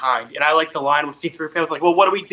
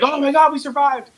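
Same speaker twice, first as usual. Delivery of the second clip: mock, very high, elated, joyful screaming; 11 semitones higher than usual. Retelling a movie scene where the group survives: imitating happy screaming. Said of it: "screaming happy".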